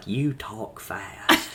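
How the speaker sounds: put-on southern drawl. Retelling what a man at church said to him: imitating a southern drawl. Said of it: "he said with that southern drawl".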